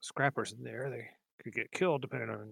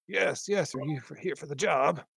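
put-on loud, puffing, huffing, a bit winded old man; 4 semitones higher, 6 dB louder than usual. An old man answers visitors ringing his bell at daybreak, huffing old man. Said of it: "Huffing a little bit as he goes and says".

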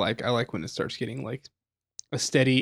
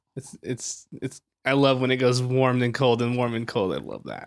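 fake-enthusiastic, sarcastic tone in a swooping sing-song. Answering how they feel about the weather getting warmer: sarcastic. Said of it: "Are you being sarcastic?".

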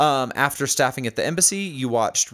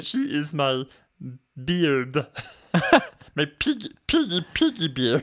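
put-on frog puppet voice, higher; 3 semitones higher than usual. Answering a question about marrying Miss Piggy, in a Kermit the Frog voice. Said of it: "it came out as Kermit the Frog".

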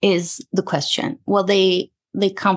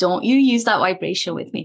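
plain

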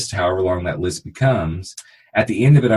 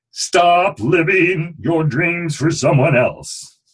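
high, irritating, annoying put-on voice; 9 semitones higher than usual. Speaker giving listeners the week's challenge, in an annoying put-on voice. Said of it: "I know that was a really annoying voice".

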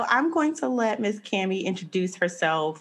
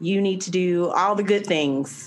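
usual speaking voice

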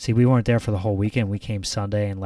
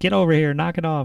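mock high-pitched scolding yell, like a mother monkey; 8 semitones higher, 4 dB louder than usual. Retelling a mother monkey at the zoo scolding her baby: imitating a mother monkey yelling. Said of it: "like she was yelling at him".

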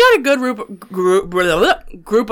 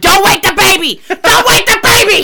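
shrill, high, slow, drawn-out repeated yelling; 13 semitones higher, 6 dB louder than usual. Retelling a promo on Raw, imitating Seth Rollins yelling. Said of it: "he just keeps yelling".

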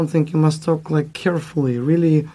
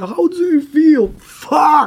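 mock very high, loud, wild scream; 11 semitones higher, 5 dB louder than usual. Telling others how they screamed on stage, retelling own scream. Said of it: "I was screaming like "fuck!"".

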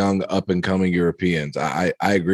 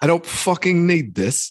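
terrible put-on British accent, very high; 10 semitones higher than usual. Retelling a golfer throwing his club into the water, awful accent. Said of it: "awful accent, awful accent".

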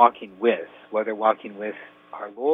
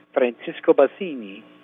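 put-on voice of a young Italian male; 2 semitones higher than usual. Introducing a young man's question, Francisco Bassini Italian boy voice. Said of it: "did you do a little Italian boy voice there?".

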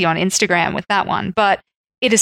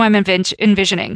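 ordinary talk

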